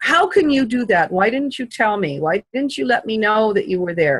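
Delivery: indignant, angry, accusing, demanding tone. Retelling confronting a man who watched her all night, the speaker voices angry questions. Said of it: "I was angry that he was not telling me".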